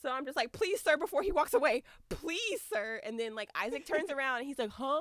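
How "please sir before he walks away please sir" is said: frantic, urgent, high, panicked pleading. Retelling begging a security guard before he walked away, retelling panicked pleading. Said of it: "I'm panicking".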